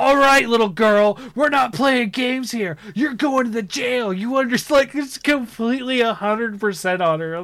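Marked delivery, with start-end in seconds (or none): 0.0-4.6 sudden, aggressive, high, accusing yell, acted out. Retelling how the detective accuses a girl of murder: imitating Cole Phelps yelling. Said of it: "accuses her of murder and yells at her".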